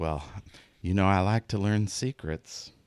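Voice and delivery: sultry, seductive, coaxing purring voice. Voicing a character who leans in toward a player: purring seductively. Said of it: "she purrs and leans her elbow".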